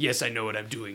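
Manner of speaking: bad put-on French accent, low and soft. Describing how a character comes across in the french version: terrible french accent. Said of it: "This is a terrible French accent".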